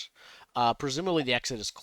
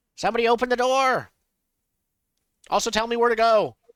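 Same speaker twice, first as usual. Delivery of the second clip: loud, very high-pitched shout; 9 semitones higher, 7 dB louder than usual. Calling from inside a stone tank for someone to open the door: yelling. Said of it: "I yell out".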